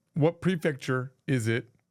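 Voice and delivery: ordinary talk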